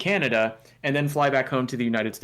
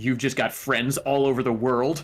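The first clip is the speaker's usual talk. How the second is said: pointed, accusatory, suspicious tone. Retelling a customs officer's question at the border: imitating an accusatory tone. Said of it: "He said it in that exact sort of accusatory tone".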